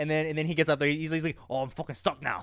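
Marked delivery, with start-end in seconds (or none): 1.5-2.4 put-on thick Scottish accent, quieter. Retelling what a man said once stuck up a tree, in a thick Scottish accent. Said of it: "in a very thick Scottish accent".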